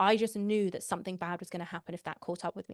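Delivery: plain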